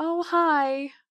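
neighborly, friendly Midwestern way of speaking. Describing a man calling out at the gate, answering the Midwestern way. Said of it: "I'll do the Midwest".

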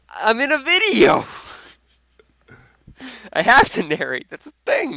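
very loud, very high yell with voice cracking. Asked by a friend why he is narrating, answering with his voice cracking. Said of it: "Sick voice crack".

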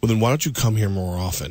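acted dry, expressionless, low, flat deadpan delivery. Retelling how the coach answered his congratulations, retelling a deadpan reply. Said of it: "looked at me deadpan and went".

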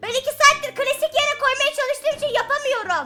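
very high, seething furious voice. Streaming a game, after two hours failing to place something: very angry. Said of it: "Çok sinirliyim".

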